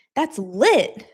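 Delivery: lively, energetic, hyped-up high-energy delivery. Teaching the slang phrase "that's lit": said with energy. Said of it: "you have to say it with energy".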